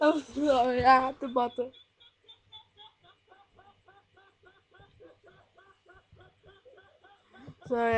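giggling through the words. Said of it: "I couldn't hold it in".

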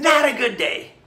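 slow, high, upbeat lift on "not a good day". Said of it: "you see the flexion, the inflection?".

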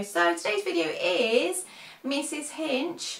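slow, high-pitched Australian accent.

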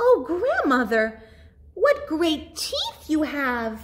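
put-on high-pitched squealing cry, like a girl. Narrator reads the girl's line to the wolf in Grandmother's bed, squealing. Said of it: "she squealed".

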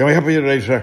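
rushed, rattled-off, very loud, high-pitched delivery. Retelling ordering at a drive-thru, mimicking the worker: fast-talking drive-thru voice. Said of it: "how fast they talk at a fast food place".

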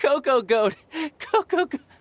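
laughing while talking. Mocking the others for falling for a trick, laughing while talking. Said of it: "My sides hurt".

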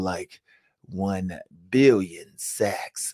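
low, quiet, hushed villain-style voice. Picturing a man sitting back like a villain, doing a Dr. Evil impression. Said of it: "I did my Dr. Evil impression".

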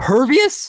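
loud voice breaking very high. Asking about a hero's ability during a game: voice cracking. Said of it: "didn't mean to voice crack there".

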